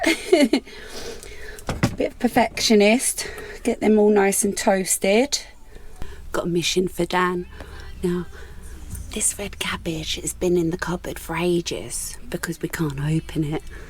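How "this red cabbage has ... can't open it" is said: soft, unvoiced whisper. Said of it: "Why are you whispering about it?".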